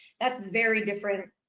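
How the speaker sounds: ordinary delivery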